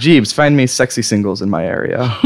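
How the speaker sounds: ordinary delivery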